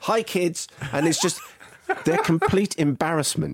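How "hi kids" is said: very high-pitched, bright and perky voice. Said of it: "you just typically are very up".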